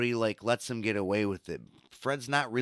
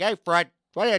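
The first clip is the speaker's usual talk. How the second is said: put-on cartoon voice, much higher pitch; 8 semitones higher, 7 dB louder than usual. Telling how a cartoon voice copied Norton's, in an Ed Norton-style voice. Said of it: "he did it like this".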